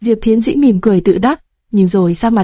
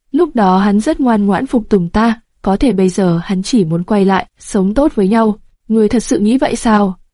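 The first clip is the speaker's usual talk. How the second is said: usual speaking voice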